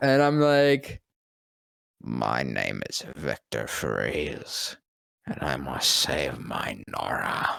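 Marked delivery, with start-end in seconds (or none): 2.0-7.6 very low, slow, rough, creaky character voice. Retelling doing a voice actor's voice after he asked for it: imitating the voice actor's character voice. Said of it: "try and do my voice".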